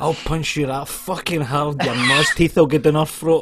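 very loud roar at the top of the voice. Retelling yelling at a wee guy who scored at the last second, retelling a roar. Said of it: "I roared at the top of my voice".

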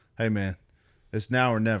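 ordinary talk, nothing marked

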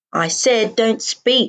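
growled words, very slowly dragged out. With a gunman in the room, a woman answers her companion, growling. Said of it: "she growls".

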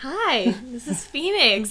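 very loud, very slow, high-pitched voice. Greeting listeners through the microphone: talking as if to a child. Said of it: "I'm talking to it like it's a, a child".

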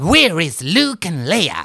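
cartoonish villain voice with big pitch swings. Showing how clips with the original voice sound, do a cartoonish original Darth Vader voice. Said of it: "mer cartoonish".

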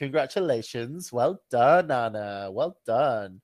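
patronizing, schoolteacher-style voice. Congratulating Anna again to show off her teacher voice. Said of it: "That was my teacher voice".

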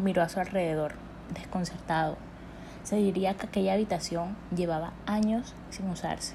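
plain reading voice

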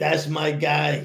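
put-on, raw New York accent. Imitating a guy at a dinner, in a raw New York accent. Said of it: "he's got that raw like New York accent".

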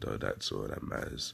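deep, low, creaky just-woke-up morning voice.

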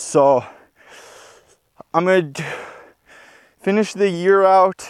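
out of breath, winded, halting, breaking mid-phrase. Talking about race plans right after running up a hill, out of breath. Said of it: "I'm out of breath".

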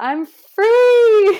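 very loud, shrill, high, booming yell held long. Retelling how the speaker yelled on the office balcony after resigning, retelling a yell.

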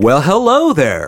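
radio announcer broadcast-style voice. A host opens the podcast, practicing for the show in radio voice. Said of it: "I'm practicing my radio voice".

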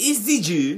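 very high, loud cartoon anime character voice. Saying a word in a made-up foreign accent: anime cartoon voice. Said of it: "now you sound like one of them anime".

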